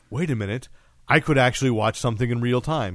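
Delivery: ordinary delivery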